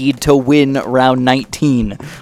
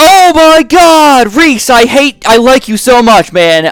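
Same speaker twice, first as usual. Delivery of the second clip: very high, furious, angry yelling; 11 semitones higher, 6 dB louder than usual. Reacting to getting one red balloon, addressing Reese, angry yelling. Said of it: "I'm not yelling at you. I'm yelling because I'm angry".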